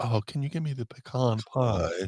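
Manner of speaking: put-on hoity-toity, fancy tone. Imitating people asking for pecan pie: imitating fancy people. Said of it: "some people get fancy and go".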